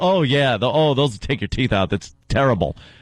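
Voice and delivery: teasing, mocking mimicry of rambling speech. Retelling how a co-host keeps changing her point: imitating a co-host. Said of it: "and she's like".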